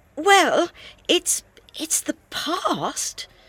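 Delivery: unsure, halting delivery. Narrator voicing a woman searching her memory for a match, hesitant. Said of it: "she said hesitantly".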